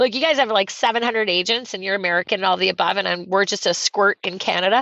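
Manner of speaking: ordinary talk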